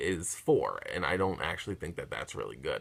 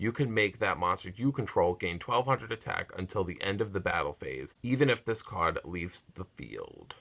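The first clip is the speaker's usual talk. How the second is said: ordinary delivery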